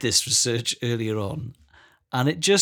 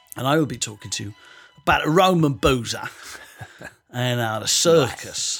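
put-on Cockney accent throughout. A podcast host previews this week's show segments in a Cockney voice. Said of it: "I'm doing a Cockney voice".

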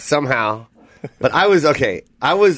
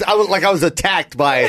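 ordinary delivery

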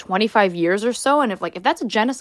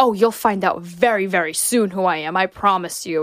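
put-on Middle Eastern-accented speech. Retelling a man at the border asked his name: thick Middle Eastern accent. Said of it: "with like a thick Middle Eastern accent".

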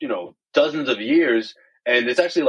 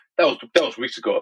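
put-on angry voice. Retelling how Kyrie answered when asked about Alex Jones: imitating Kyrie's angry reply. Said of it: "the anger just fill up his face".

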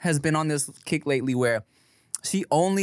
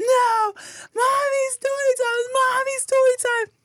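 put-on very high, loud, crying toddler tantrum scream.

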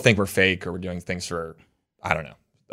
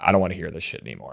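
hushed aside, muttered under the breath; 4 dB quieter than usual. Retelling a remark Maya made at the reunion: imitating Maya muttering under her breath. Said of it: "under her breath was like".

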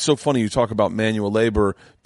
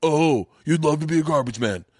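mock indignant, angry, high-pitched voice; 6 semitones higher than usual. Imitating an imagined angry listener's reply: imitating an angry person. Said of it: "someone right now is angry".

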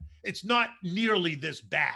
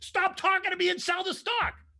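shrill, high-pitched screaming; 14 semitones higher than usual. Retelling a fund manager's order on the phone: imitating a client screaming. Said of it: "You're screaming at me to sell the stock".

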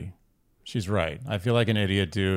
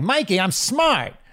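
put-on pathetic voice, higher; 11 semitones higher, 4 dB louder than usual. Acting out Fredo pleading with his brother Michael: Fredo voice. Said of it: "it's like Fredo in Godfather Two".

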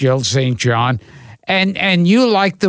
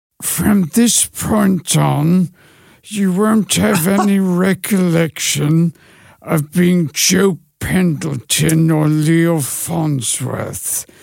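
put-on British actor voice. Asked to show a little of an impression: James Mason impression. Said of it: "give him a little bit of your James Mason impression".

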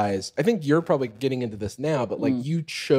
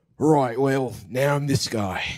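attempted British accent drifting over into Australian accent. Asked to do a British accent, a speaker tries one, accidental Australian accent. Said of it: "That sounds Australian".

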